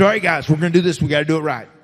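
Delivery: put-on Southern wrestler accent. Retelling what a wrestling partner said on the road: Michael Hayes half-ass accent. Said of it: "a Michael Hayes half-ass accent".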